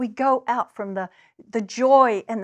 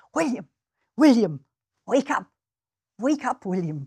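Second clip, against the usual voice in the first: clumsy, half-managed put-on Scottish accent. Retelling a murdered wife calling her husband William in his dream, bad Scottish accent. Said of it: "I can't do a Scottish accent very well".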